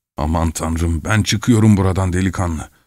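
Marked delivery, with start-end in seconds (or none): none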